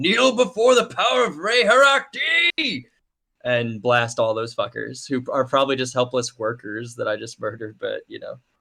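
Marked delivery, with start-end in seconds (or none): 0.0-2.8 high, slow yelled battle cry. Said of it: "I'm gonna yell".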